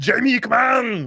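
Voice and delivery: high Austrian accent. Showing how he calls his wife Jamie, in an Arnold impression. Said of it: "I can't do conversational Arnold".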